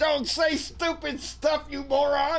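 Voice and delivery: high, slow, drawn-out shout.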